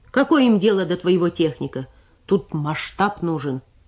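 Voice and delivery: plain reading voice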